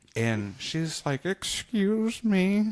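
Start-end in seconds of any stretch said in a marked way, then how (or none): 1.3-2.8 very high-pitched, put-on ancient old woman voice. Retelling a story about an old woman and a manager, doing a hundred-twenty-year-old woman voice. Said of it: "one hundred twenty years old".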